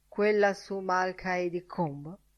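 ordinary delivery

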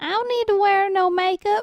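Georgia Southern accent. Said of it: "Right here in Georgia".

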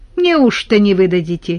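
mocking, teasing and scornful. A collective farm woman asks the old man at the pharmacy, mockingly. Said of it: "насмешливо спросила колхозница".

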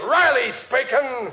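pompous, self-important big-shot voice, high-pitched. Answering the office phone and acting important, talking like a big shot. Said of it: "Talk like a big shot".

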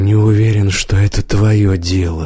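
ordinary delivery

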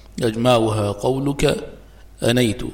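ordinary talk

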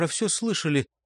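ordinary talk

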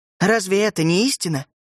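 ordinary delivery

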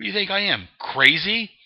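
high, loud, indignant inmate voice.

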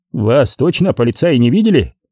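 usual speaking voice

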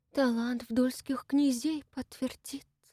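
soft, quiet, hushed delivery. Ulyana Denisovna answers Lopushkin's challenge about who will confirm it, quietly. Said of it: "Так же тихо проговорила".

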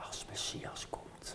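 timid, shy, hushed whisper. Recounting a teacher's answer after a lecture, retelling a shy, soft reply. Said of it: "heel schuchter en zachtjes zei ze".

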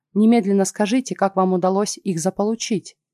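ordinary delivery

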